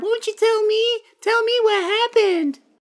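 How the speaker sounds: very high, cutesy, cuddly teddy bear voice. Retelling how they questioned a man through his teddy bear: teddy bear voice. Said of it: "they like do the voice of the teddy bear".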